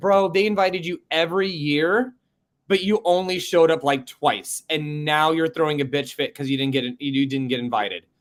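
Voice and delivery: ordinary talk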